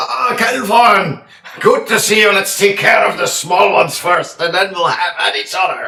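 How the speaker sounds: rowdy, boisterous bellow at very loud volume. Playing a boisterous character in a game who greets someone before a fight, shouting. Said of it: "he probably shouts".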